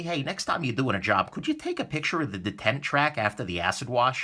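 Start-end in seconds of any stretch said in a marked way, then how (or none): none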